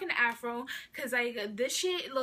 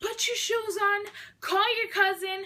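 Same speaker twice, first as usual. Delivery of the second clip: put-on frantic, high-pitched screaming; 8 semitones higher, 6 dB louder than usual. Retelling the mom's reaction after hearing what happened: imitating mom screaming. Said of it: "she started screaming".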